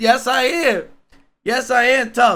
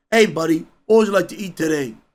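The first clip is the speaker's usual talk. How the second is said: very deep, dropped man's voice; 7 semitones lower than usual. Comparing who serves at restaurants, imitating a grown man asking what to eat. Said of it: "If I have a grown ass man coming".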